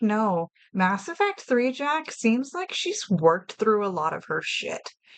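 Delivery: ordinary delivery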